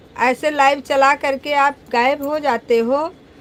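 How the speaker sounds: plain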